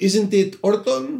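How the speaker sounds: put-on Spanish accent. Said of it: "I had to do a Spanish accent".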